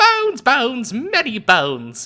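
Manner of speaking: put-on very high, bouncy, playful childlike goblin voice. A happy goblin in the scene keeps shouting for bones, in a playful childish voice. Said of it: "That was my playful, childish voice".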